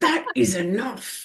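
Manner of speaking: stern, through gritted teeth. A mother retells her child scolding her in a fish and chip shop, retelling a gritted-teeth telling-off. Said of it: "through gritted teeth".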